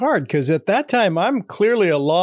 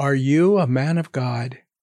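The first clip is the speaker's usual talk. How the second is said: put-on slow, menacing, intimidating voice; 4 semitones lower than usual. Recalling how someone once asked them a question, imitating a scary tone. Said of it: "You said it like that, like really kind of scary".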